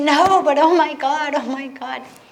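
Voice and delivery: put-on loud, drawn-out, hysterical sob-racked protest. Retelling refusing dinner after a day in the slums: imitating her own hysterical sobbing. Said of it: "I'm sobbing hysterically".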